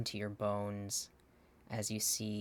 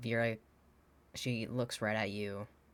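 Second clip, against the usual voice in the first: ordinary delivery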